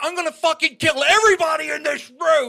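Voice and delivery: wild, shrill, very loud screaming. Retelling a bleeding man screaming at the speaker; retelling a scream. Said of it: "He is screaming at me".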